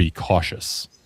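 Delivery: very low, flat, expressionless monotone drone. Retelling what a woman said when her voice changed, in a flat monotone. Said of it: "says in a very flat monotone".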